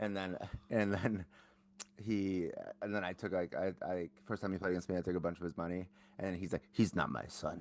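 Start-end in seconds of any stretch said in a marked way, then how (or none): 6.7-7.6 put-on heavy Spanish-influenced accent, laid on thick.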